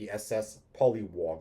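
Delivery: ordinary delivery, nothing marked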